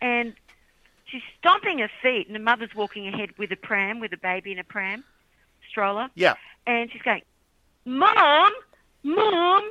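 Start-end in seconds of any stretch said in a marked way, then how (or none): 7.9-9.7 put-on very high, raised little girl yell. Retelling a little girl calling after her mother in Kansas City, retelling a yell. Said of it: "She's yelling out".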